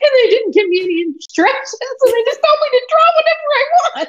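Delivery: mock anxious panic, rising to very high pitch. Imitating the other speaker given no drawing instructions, imitating rising anxiety. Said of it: "hear the anxiety start building in your voice".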